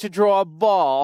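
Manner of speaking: accent of southern England. Asked whether they can do a Southern English accent, demonstrating one. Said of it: "can you do a Southern English accent".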